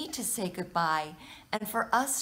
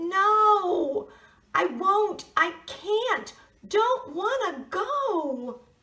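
high, shrill, loud yell, stretching the no; 11 semitones higher, 7 dB louder than usual. Story narrator, refusing to leave when supper time comes; yelling. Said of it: "supper time comes and I yell".

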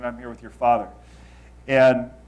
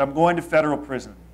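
plain

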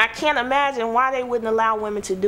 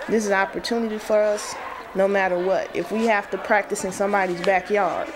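plain

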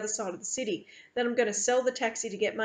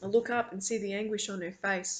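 usual speaking voice

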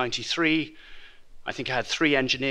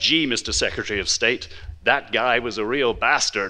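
put-on borrowed American accent. Speaker quotes the American president talking to his Secretary of State, American accent. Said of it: "forgive my American accent".

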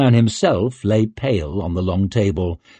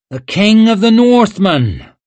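showy, very high, loud, delighted cry; 12 semitones higher, 7 dB louder than usual. A woman raises her arms to greet a visitor, delighted. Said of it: "She raised her arms in delight".

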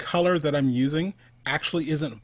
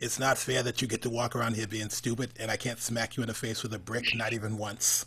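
very raspy voice, rattled off fast; 3 semitones lower, 5 dB quieter than usual. Demonstrating for a listener how Barry talks, use a very raspy Barry voice. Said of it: "Barry has a very raspy voice".

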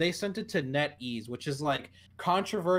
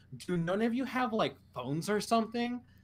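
mock patronizing, condescending, talking-down tone, pitched up; 6 semitones higher than usual. Retelling an announcer's reply to booing: imitating a condescending tone. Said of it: "in the most condescending way possible".

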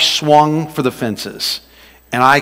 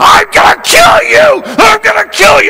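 very high, loud shouted yelling; 8 dB louder than usual. Retelling what his brother yelled while they ran, imitating a yell. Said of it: "my brother is yelling".

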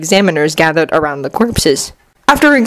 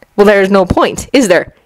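ordinary delivery

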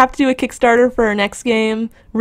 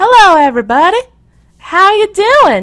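high, played-up put-on girly voice; 8 semitones higher, 4 dB louder than usual. Discussing who does which character voices, a speaker demonstrates; girl voice. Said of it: "I think I'm better at the girl voices".

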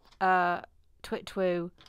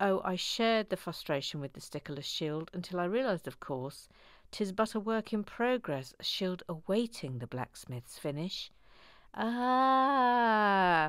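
ordinary talk, nothing marked

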